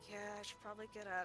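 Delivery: mimicked muttering. Retelling talking to oneself about moving a straightener: imitating muttering under breath. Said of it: "under my breath".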